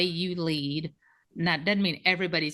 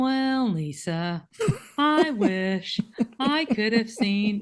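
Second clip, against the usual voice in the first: put-on cartoon donkey voice, higher and louder; 6 semitones higher, 4 dB louder than usual. Imitating someone who walks into the office complaining: Eeyore voice. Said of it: "it's like Eeyore from Pooh".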